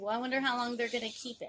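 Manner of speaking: acted, soft sneering mocking tone. Imitating people who belittle someone's new job: mocking voice imitating naysayers. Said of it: "that's my little mockery voice of people".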